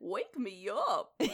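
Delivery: full dopey, dim-witted cartoon dog voice. Recalling a Vine of someone dressed as Goofy, the speaker does a Goofy voice. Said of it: "I can do a good Goofy".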